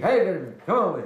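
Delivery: crude, rough street-corner calling voice. Showing how a crude street person would call someone over: rough street voice calling out. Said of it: "sounds like a gutter snipe from somebody out in the street".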